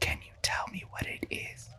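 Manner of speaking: hushed voice. Whispering in character to a companion about an odd oven: whispering. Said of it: "and I whisper".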